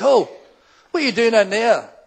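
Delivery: loud acted-out shout, calling out. Retelling calling out to people climbing a fence: retelling a shout. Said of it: "and I shouted".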